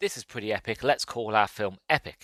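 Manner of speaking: ordinary talk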